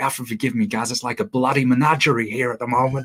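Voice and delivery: put-on broad Australian accent. Speaker quotes a man from australia who got up early to talk, imitating broad aussie accent. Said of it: "in this really broad Aussie accent".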